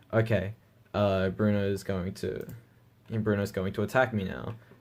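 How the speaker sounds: normal talking voice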